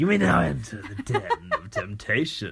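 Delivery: grand, swooping, theatrical TV announcer voice. Recalling a character voice from the show with a podcast partner, Big Brother Den of Temptation voice. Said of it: "some character out of Big Brother U S A".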